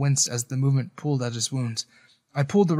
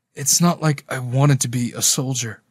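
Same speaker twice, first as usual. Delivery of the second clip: plain reading voice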